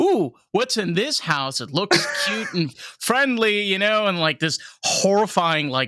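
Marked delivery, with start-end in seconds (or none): 0.0-3.6 high, sing-song, swinging animated cartoon character voice. Describing a Family Guy scene: Peter voice from Family Guy. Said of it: "and Peter is like".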